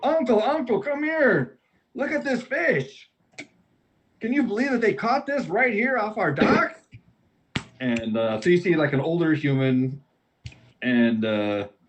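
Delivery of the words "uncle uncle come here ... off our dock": mock very high-pitched, excited yell. Telling a story, acting out people calling an older man over; retelling a yell. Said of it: "they they yell to him".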